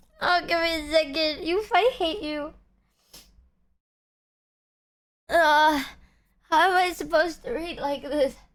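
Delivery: crying while talking, tearful voice. Trying to read something aloud to chat, crying while talking. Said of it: "I'm crying".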